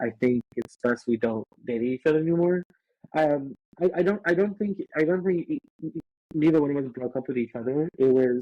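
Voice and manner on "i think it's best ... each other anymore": ordinary delivery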